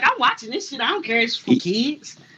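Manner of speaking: ordinary talk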